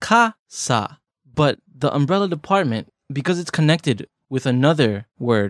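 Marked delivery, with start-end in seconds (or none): 0.0-1.0 falling pitch on kasa, ka high, sa low. Teaching the word kasa for umbrella: kasa falling high to low. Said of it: "It goes from high to low".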